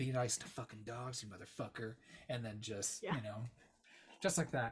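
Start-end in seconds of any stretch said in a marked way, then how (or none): 0.0-1.9 acted-out whisper. Recounting a movie scene, acting out a woman's line to the killer, retelling a whisper. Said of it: "she just whispers into his ear".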